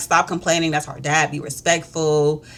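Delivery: normal talking voice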